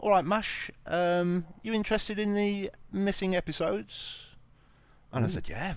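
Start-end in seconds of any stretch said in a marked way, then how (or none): 0.0-4.2 put-on London spiv accent, very high. Retelling what a man at a flea market said to you, in a put-on London spiv accent. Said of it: "he didn't have a sort of London spiv accent".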